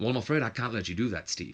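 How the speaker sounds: bad, horrible fake British accent. Acting out a wrestling scene, a character answers steve, horrible british accent. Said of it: "this horrible British accent".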